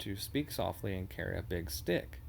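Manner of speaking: usual speaking voice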